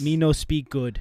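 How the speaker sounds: talking like a caveman. Playing along with a joke about speaking badly, caveman talk. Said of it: "Like a caveman?".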